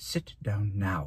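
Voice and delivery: said softly, quietly and evenly. Miss Thorne, hand on Dune's shoulder, telling him to sit, said quietly. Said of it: "she said quietly".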